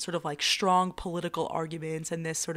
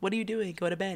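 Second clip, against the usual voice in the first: ordinary delivery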